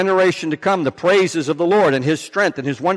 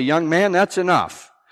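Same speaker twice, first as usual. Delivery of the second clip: mock-stern, put-on stern tone. Recounting telling off a child whose parents weren't controlling him, retelling a stern rebuke. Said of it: "I had to sternly say".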